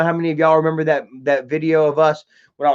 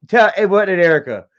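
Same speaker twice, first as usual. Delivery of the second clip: ordinary delivery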